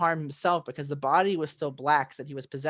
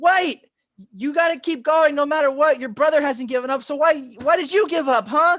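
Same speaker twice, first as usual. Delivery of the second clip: urgent, shrill, high screaming, very loud; 11 semitones higher, 9 dB louder than usual. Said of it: "he's literally screaming".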